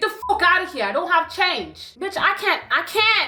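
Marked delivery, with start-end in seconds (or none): 0.0-1.9 strong put-on Canadian accent. Retelling what a man said to the speaker, in a strong Canadian accent. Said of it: "he had like a strong Canadian accent".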